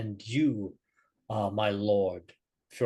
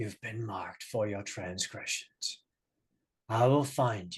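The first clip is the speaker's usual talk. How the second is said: barely audible, very quiet, hushed voice; 3 dB quieter than usual. Narrating a scene to the players, a voice in the mist speaks in a very quiet voice. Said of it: "in a very quiet voice".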